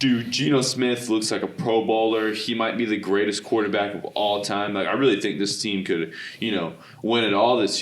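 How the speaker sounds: ordinary talk, nothing marked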